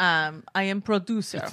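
put-on Russian accent. Joking about looking like a producer, in a put-on Russian accent. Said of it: "Or like a Russian".

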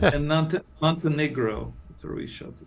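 put-on Montenegrin accent. Telling interviewers where a movie was shot, put-on Montenegrin accent. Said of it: "That's a good Montenegro accent that you're putting on there".

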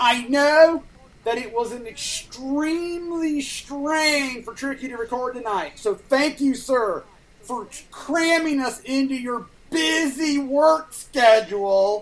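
very slow, heavy, dripping sarcasm. Thanking someone for recording tonight, sarcastic. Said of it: "That was all sarcasm".

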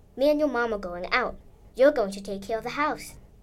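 usual speaking voice

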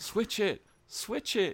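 very high, stretched, drawn-out calling out. Retelling what someone in a football game shouted: imitating someone shouting. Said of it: "somebody just shouts".

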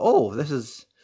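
ordinary talk, nothing marked

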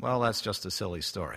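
the word "silly" stressed and leaned on. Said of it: "Emphasis on silly".

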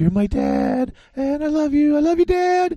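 very high, squeaky, put-on character voice. Doing an impression of the movie character Elf: Elf impression. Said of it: "That's my Elf impression".

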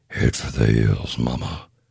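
put-on rough gravelly voice, like gargling gravel. Recalling what a performer would say in the booth, gravel-gargling put-on voice. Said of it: "How the hell do you do that voice?".

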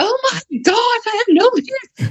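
mock freaking out. Imagining a leafless tree's thoughts, mock freaking out. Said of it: "It's not freaking out like".

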